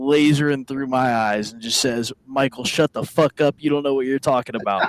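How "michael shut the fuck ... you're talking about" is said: mock flat, cold, mean, fast deadpan delivery. Retelling his aunt's reply to him when he was twelve, deadpan, stone-cold. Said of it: "Deadpan, stone cold, just mean eyes".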